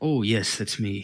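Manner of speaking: put-on genial, friendly, cheery old wizard voice. Voicing an old wizard answering the players: said with a big smile. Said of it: "with this big smile on his face says".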